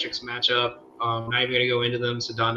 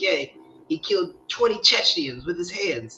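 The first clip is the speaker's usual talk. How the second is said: tough-guy mobster drawl, pitched up; 6 semitones higher than usual. Quoting a scene in the woods: Sopranos mobster voice. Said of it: "remember me doing that voice is I was watching The Sopranos".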